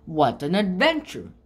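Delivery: plain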